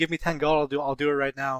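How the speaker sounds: shouting. Playing a character calling after someone leaving the tavern: yelling after someone leaving. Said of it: "I'll yell, like, as he's leaving".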